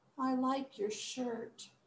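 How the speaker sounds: soft, slow, sorrowful, downcast voice. Demonstrating how to say a line in a sad way: sad. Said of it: "let's sound sad".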